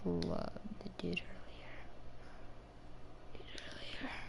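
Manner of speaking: soft, hushed whisper.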